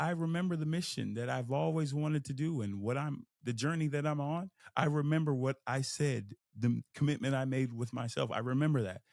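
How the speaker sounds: ordinary delivery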